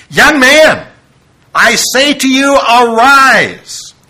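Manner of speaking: put-on loud, high, very slow delivery, arise drawn out. Retelling a Bible scene, quoting the command to the dead young man: loud voice. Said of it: "I believe he said it in a loud voice".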